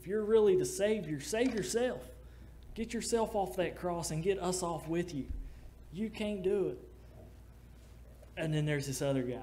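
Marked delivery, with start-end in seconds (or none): 0.0-6.8 mocking, scornful jeer in a higher voice. Retelling how a man crucified beside Jesus mocked him: retelling a mocking taunt. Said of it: "he's mocking Jesus".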